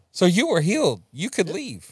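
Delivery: heavy, dripping sarcasm. Teasing another speaker about leaving the program early: sarcastic. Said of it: "If y'all can't hear or see the sarcasm".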